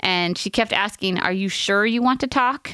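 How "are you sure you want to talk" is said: ordinary talk, nothing marked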